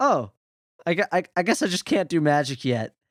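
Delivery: put-on nonchalant, offhand tone with a stumbling start. Retelling how a character reacts to failing at magic: imitating a blasé response. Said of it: "blasé response to this magical world".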